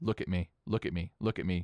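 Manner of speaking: plain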